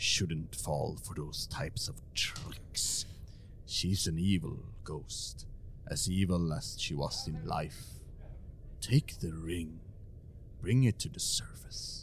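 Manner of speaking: gruff voice. Voicing a voice heard underwater in a player's head: gruff voice. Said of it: "you hear a gruff voice inside your head".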